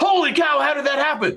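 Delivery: high-pitched, startled, shocked exclamation. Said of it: "I was like".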